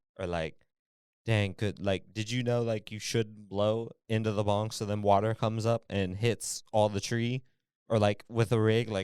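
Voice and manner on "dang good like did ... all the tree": usual speaking voice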